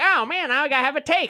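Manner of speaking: mock commentator voice. Describing the pretend voice everyone uses for a take: mock hot-take voice. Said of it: "pretend voice of".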